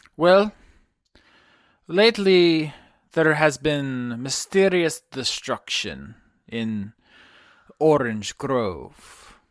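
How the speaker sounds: put-on Ukrainian accent, put on. Voicing a character in the game: Duke Pendergrass Ukrainian accent. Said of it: "Duke Pendergrass is my Ukrainian accent".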